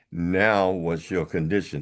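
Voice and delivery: plain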